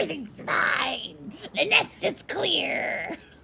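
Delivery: high, creaky, raspy monster voice. The game master describes a player faking a monster's voice: Ettercap monster voice. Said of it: "a pretty convincing Ettercap voice".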